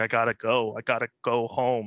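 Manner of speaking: put-on crying, tearful voice. Retelling asking to go home for a funeral: imitating someone crying. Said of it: "when I was crying in the office".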